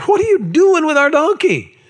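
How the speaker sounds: indignant delivery.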